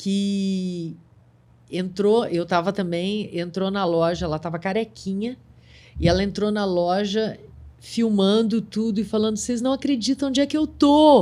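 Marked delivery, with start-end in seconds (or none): 9.4-11.2 high, tearful, weepy sobbing voice, acted. Retelling a customer who filmed herself entering the shop: imitating someone crying. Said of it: "e chorando".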